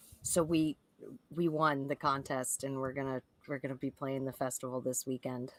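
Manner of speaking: low, hushed, secretive, dropped voice. Showing how they share contest news without others noticing, in a dropped voice. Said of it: "I'm gonna drop my voice".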